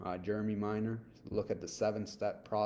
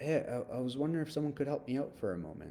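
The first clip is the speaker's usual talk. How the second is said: a little bit confused, slightly puzzled; 4 semitones higher than usual. Demonstrating asking for help at a gas station, a little bit confused. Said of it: "sometimes you want to sound confused".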